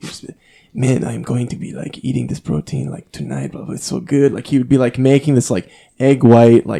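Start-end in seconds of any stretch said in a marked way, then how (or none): 0.7-4.3 thick put-on Brazilian accent. Describing living with friends, quoting one friend in his brazilian accent. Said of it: "he had this insane Brazilian accent".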